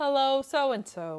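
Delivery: computer-generated, game-style robot voice. Describing a simple game's default greetings, doing its robot voice. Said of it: "everybody's robot voices are like".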